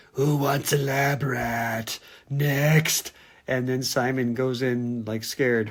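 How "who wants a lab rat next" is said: slow, creepy, scary voice, "rat" drawn out. Retelling a scene where a voice calls from room forty-two, in a scary voice. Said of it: "you hear a scary voice".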